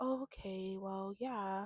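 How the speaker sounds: gentle, soft, slow, mild soft-spoken murmur. Imitating a cast member who talks very softly: imitating a soft-spoken voice. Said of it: "soft-spoken thing where they talk so soft".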